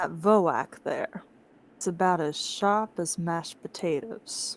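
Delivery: hushed whisper, leaning in. Game master as the Dragonborn, leaning close to Ali: whispering. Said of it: "Leans closer to whisper".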